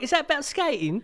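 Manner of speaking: very high, extra-heavy put-on Cockney English accent. Retelling an english man's question, in a put-on cockney accent. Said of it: "A little bit more Cockney".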